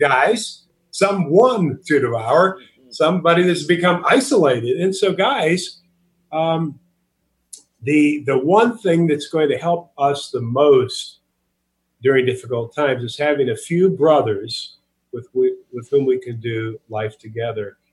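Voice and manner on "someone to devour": someone stretched out, high pitched and slow. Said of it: "Not some group".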